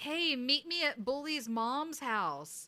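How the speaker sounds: put-on yell, called out slow and high. Retelling a movie scene where a character taunts a bully: imitating someone yelling. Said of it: "Michael yells out".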